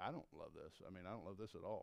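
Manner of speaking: quiet aside.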